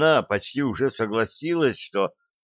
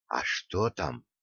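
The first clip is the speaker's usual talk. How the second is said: hushed, quiet whisper; 5 semitones lower, 9 dB quieter than usual. A narrator reads Vilora whispering a question back to Sima, whispered question. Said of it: "также шепотом спросила Вилора".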